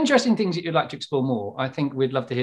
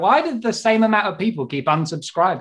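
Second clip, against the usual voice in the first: usual speaking voice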